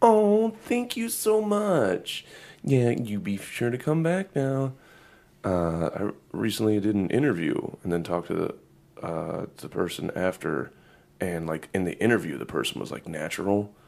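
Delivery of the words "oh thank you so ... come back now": over-the-top fake-nice, very high, swooping service voice. Mocking people with fake-nice service voices, in an over-the-top customer service voice. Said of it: "obvious over-the-top customer service voices".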